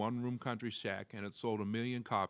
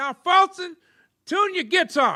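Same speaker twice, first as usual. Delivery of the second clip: high effeminate put-on voice, higher and louder; 17 dB louder than usual. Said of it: "He just had that high, effeminate voice".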